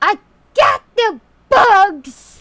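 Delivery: very high, very loud, shrill, booming gnome yell. Playing a little gnome who comes up in the road: yelling gnome voice. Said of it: "he just yelling".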